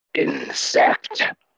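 very low, quiet rumbling dragon voice. A dragon speaks one word to the last intruder in its nest, very low, quiet rumble. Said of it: "a voice rumble from the creature, very low, very quiet".

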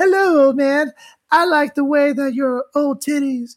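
very high-pitched lady voice. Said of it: "Now she sounds like [name]".

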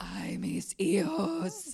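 spooky raspy voice. Voicing a spooky line to be played through a gramophone, raspy voice. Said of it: "Raspy voice for you there".

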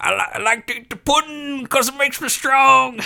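very high-pitched, clumsy put-on caricature voice. Retelling a Jell-O pudding bit: Bill Cosby impression. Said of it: "Bill Cosby, uh, impression of".

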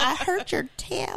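put-on proud country accent, pitched very high. Quoting anonymous Knicks fan 92, proud after snagging a player, in a country accent. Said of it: "he got a country accent all of a sudden".

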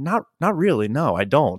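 put-on muttered aside, still audible. Retelling a guide offering the group a story, re-enacting own reply muttered under breath. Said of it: "under my breath, but loud enough for everybody to hear".

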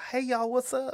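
put-on camp Southern accent.

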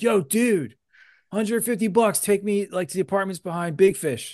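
mock shouted call, very high and yelled. Retelling how a man yelled at them and their friends, imitating his yell. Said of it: "He just yelled".

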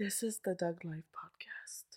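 British-sounding. Saying the podcast's intro line while a co-host listens, British-sounding podcast intro. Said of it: "That sounded British".

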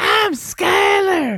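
mock annoying voice, very high, slow, loud.

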